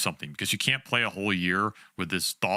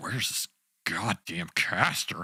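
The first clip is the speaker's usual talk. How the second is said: mock, slow, drawn-out, exasperated, frustrated delivery. Commenting on players waiting for the caster, imitating Boxy's frustration. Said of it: "He's getting frustrated. He's like".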